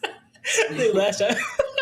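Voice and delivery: high, slow laughter through the words.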